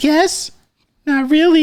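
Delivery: put-on very high, girlish voice. Describing a lip-sync video, voicing the girl's reply, imitating a girl's voice. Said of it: "it's like this like random girl's voice".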